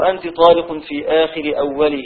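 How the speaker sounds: ordinary talk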